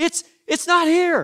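acted yelling. Retelling an argument from the kitchen: acting out a yell. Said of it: "you yell back".

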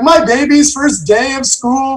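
put-on crying. Describing parents on their kids' first school day, imitating a crying parent. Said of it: "probably half of them are just openly crying".

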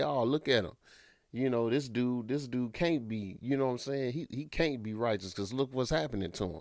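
normal talking voice

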